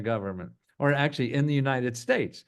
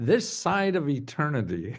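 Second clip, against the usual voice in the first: plain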